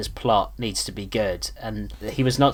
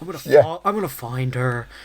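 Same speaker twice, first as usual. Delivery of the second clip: put-on menacing villain voice, higher pitch; 3 semitones higher, 4 dB louder than usual. Imitating a movie villain threatening to find and kill a girlfriend: Philip Seymour Hoffman impression. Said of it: "That's a great impression".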